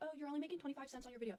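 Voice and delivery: snide, belittling, mocking, taunting tone. Recounting a feud, imitating a woman's mocking taunt. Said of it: "clowning on me and being like".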